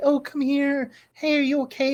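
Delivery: very sweet, honeyed, sugary, high voice. Voicing a voice heard through a door: very sweet voice. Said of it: "with a very sweet, like".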